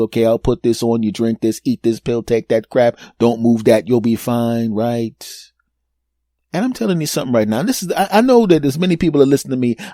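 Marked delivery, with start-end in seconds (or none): none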